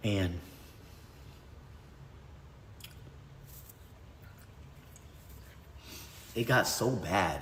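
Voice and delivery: tearful, crying while talking. Telling about a parent's drug ceremonies near the kids: crying while talking. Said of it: "I wasn't even gonna fucking cry".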